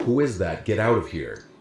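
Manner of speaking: usual speaking voice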